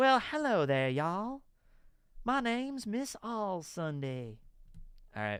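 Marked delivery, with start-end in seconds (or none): 0.0-4.4 put-on soft, pitched-up Southern belle voice. Describing the character in the 4Kids dub, Miss All Sunday's Southern belle voice. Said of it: "She does talk like that".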